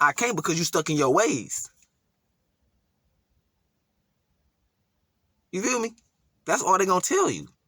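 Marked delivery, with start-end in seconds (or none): 0.0-5.9 put-on blunt stern tone, higher. Acting out what a lost loved one would say: acting out a blunt rebuke. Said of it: "This is gonna be blunt".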